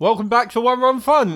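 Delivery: garbled with mouth full, very high and loud. Opening the show one run fun while eating, talking with mouth full. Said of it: "That's [name] with his mouthful".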